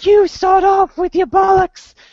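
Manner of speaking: put-on very high, loud little-kid squeaky voice. Quoting what some twelve-year-old kids said while playing, in a really high kid voice. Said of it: "they had these really high voices".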